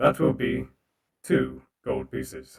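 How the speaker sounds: loud, low, deep, booming mechanical robot voice. Voicing a construct bartender asking for payment: robot voice. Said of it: "Let me turn on the robot voice for this".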